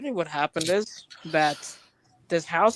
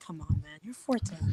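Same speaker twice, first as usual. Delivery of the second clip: soft, very sad, sincere delivery; 5 dB quieter than usual. Acting out someone being straight with him, imitating a sad tone. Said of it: "in a very sad tone of voice".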